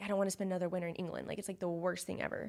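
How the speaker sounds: ordinary talk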